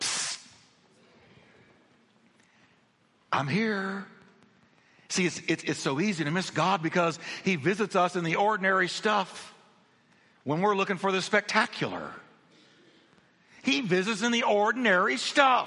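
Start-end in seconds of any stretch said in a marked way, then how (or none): 0.0-4.0 very soft, barely voiced, hushed whisper. A speaker voices god speaking from a distance, in a whisper. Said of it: "in a whisper".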